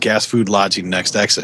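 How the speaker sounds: usual speaking voice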